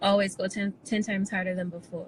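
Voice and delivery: ordinary talk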